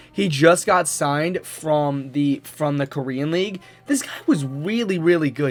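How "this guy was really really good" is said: voice suddenly cracking mid-phrase. Discussing a player just signed from the Korean League, with a voice crack. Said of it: "that was a bad man voice crack".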